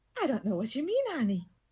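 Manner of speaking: assumed feminine register. A character answers someone asking about muzzles for dragons, in a feminine voice. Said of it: "this time in a feminine voice".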